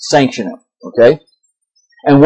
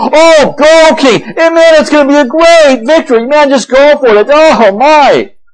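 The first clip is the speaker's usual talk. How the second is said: high, sarcastic mock cheer. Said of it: "Micaiah does it in a sarcastic, an irony".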